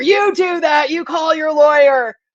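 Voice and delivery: put-on, stern, high-pitched shouting yell. Retelling court staff answering the woman: imitating someone yelling. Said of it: "they yell at her".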